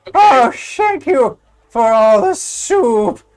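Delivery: put-on slow, loud, very drawn-out, toothless whistling old-man voice. Retelling an older man missing front teeth, in a whistling old man voice. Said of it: "he kind of whistles a lot when he talks".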